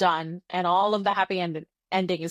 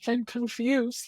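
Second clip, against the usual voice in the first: put-on slow, crying, confused old man voice. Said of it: "he continues crying".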